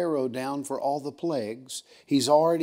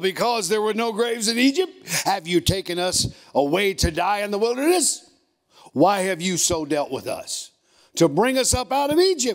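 put-on snotty sarcasm, higher; 6 semitones higher, 4 dB louder than usual. Acting out a group's complaint about being led out of egypt, mock snotty sarcasm. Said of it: "Can you hear the sarcasm?".

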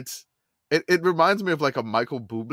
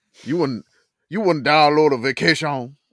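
put-on Cajun accent, louder; 4 dB louder than usual. Friends riffing on a download slogan; one redoes it in a Cajun accent. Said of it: "you gotta say that in Cajun though".

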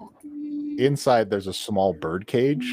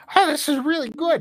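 put-on fairy dragon voice, much higher; 4 dB louder than usual. Given a sandwich from a bag, Glitterwing replies in Glitterwing fairy dragon voice. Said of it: "there is a little fairy dragon".

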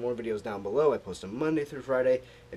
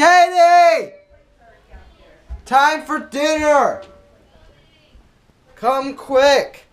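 very high, very loud, shrill angry yelling; 16 dB louder than usual. Calling someone to come to dinner, angry shouting. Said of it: "Why are you so mad? You sounded angry".

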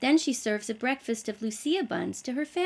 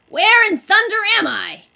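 very loud, insistent, high-pitched, demanding; 8 semitones higher, 13 dB louder than usual. The little man climbs out of a crate and demands answers: demanding. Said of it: "he demanded".

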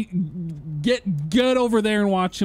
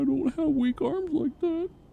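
high, mock tearful, sobbing crying voice; 7 semitones higher, 5 dB quieter than usual. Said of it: "He's crying right now".

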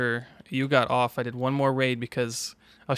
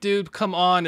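mock frantic, exasperated, panicked and desperate; 5 semitones higher than usual. Retelling being shot at while waiting to extract: reenacting own panic.

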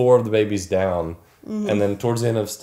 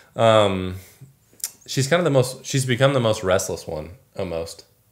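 plain

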